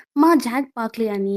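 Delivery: normal talking voice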